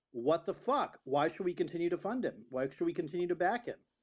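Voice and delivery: ordinary talk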